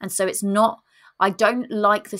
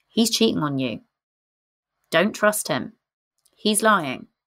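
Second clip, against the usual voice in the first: steady, clear, calm, low, simple voice. Demonstrating how your gut speaks to you, in a calm low voice. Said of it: "the voice is quite low".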